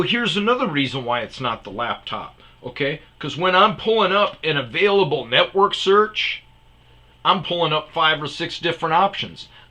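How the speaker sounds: heated angry rant.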